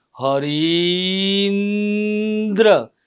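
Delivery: word said slowly, syllables split apart. Teaching how speaking slowly separates a joined word: Harindra said slowly, split apart. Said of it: "હવે એને તમે ધીમે રહીને બોલશો ને તો એ શબ્દ સંધિ છૂટી પડી જશે".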